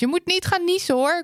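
high, repeated, taunting call-out.

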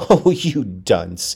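laughing while speaking. The narrator teases him after he stalls on the figures, laughing.

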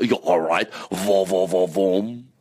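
poor put-on Swiss accent. Joking about what people say of him, the speaker shows a bad fake swiss accent. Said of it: "best Switzerland accent".

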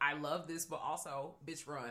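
normal talking voice

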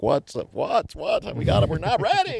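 mock very high, jittery, nervous complaining. Retelling own backstage nerves before a show: imitating own nervous kvetching. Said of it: "I was backstage kvetching and going like".

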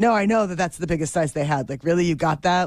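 ordinary delivery

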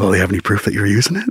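hushed, very low, quiet and quick voice. Retelling a phone call about a court date, imitating the woman going real quiet. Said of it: "she gets real quiet".

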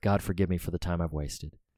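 muttered under the breath. Retelling a character's brief line, said under his breath. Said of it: "but he says under his breath".

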